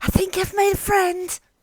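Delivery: shrill, high, loud theatrical stage whisper. Whispering to the whole group after a small creature waves back: stage whisper. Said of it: "I'm gonna stage whisper to everyone".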